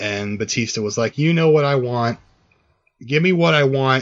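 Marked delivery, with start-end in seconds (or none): 1.2-4.0 higher-pitched put-on angry scream. Retelling a wrestler screaming at his rival: imitating Batista screaming. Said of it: "It was him screaming that back".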